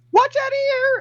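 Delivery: tiny, very high-pitched voice. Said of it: "you just hear a small voice go".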